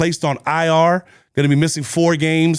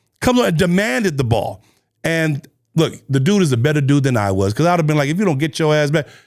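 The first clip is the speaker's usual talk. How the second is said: normal talking voice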